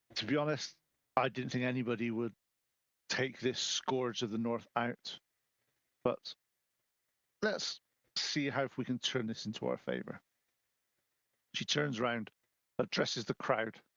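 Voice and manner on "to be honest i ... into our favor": quiet, hushed, confiding tone. Running a game, voicing a woman speaking so only the players hear: hushed tone. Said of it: "a hushed tone".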